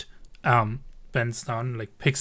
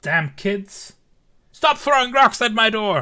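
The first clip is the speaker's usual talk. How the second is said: very high-pitched, loud yelling shout; 10 semitones higher, 8 dB louder than usual. Voicing a character stepping out into the rain: character yelling. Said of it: "He, like, just yells".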